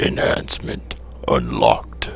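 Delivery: slow, whispered, put-on funny voice.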